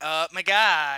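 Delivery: put-on very loud rich-girl voice. Describing girls the speaker stops talking to: stereotypical rich girl voice. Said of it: "like that voice".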